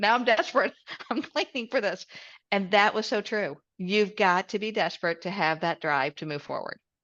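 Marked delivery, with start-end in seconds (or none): 0.0-2.0 acted, high-pitched, sobbing, tearful crying voice. Retelling sitting down after cleaning a toilet: imitating own past crying. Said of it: "started crying going".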